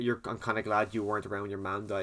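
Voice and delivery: ordinary talk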